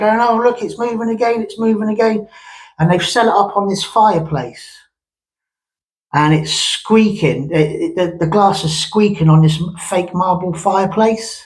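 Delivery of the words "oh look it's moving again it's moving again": mock high-pitched screaming and shouting. Retelling a group at a Ouija board one night: imitating people screaming and shouting. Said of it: "screaming and shouting".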